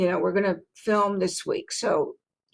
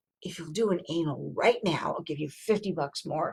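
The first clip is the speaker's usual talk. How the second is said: soft, hushed half-whisper, very close up; 3 semitones lower, 8 dB quieter than usual. Retelling an offer half-whispered in the middle of a scene: imitating someone half-whispering. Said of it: "stop and whisper in your ear".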